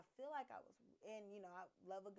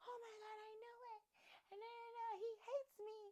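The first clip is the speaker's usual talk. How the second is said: very high, weepy, sobbing wail. Retelling what the crying girl said about him: imitating someone crying. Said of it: "crying and just like".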